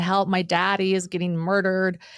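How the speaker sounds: put-on crying girl voice, tearful and pleading. Retelling a little girl's nine one one call: imitating a crying girl. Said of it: "She's crying".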